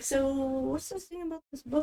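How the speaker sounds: very quiet, hushed, barely audible under-the-breath half-whisper. Asking in character about a book, not making it obvious: half-whispering under breath. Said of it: "under my breath, just kinda whispering".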